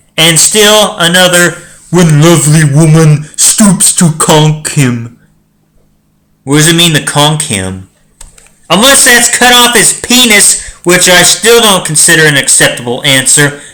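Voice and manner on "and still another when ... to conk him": dim-witted, dumb, primitive caveman voice. Reading a badly worded sentence aloud to listeners: reading like a caveman. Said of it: "So I'm gonna read it like a caveman".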